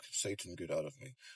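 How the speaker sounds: deep, very low, very quiet, barely audible murmur. Speaker quotes the woman she was helping into a chair: retelling a low murmur. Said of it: "Like she was murmuring it".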